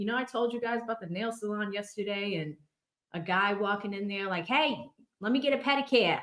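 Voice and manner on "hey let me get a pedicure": high, wild put-on Boston accent. Telling listeners about a customer at a nail salon, imitating a boston accent. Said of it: "like these accents are crazy".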